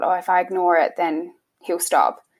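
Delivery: ordinary talk, nothing marked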